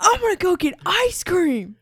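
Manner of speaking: shrieked, very loud, very high, drawn-out scream. Retelling how someone screamed at a helper: imitating someone screaming. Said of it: "he just screams at her".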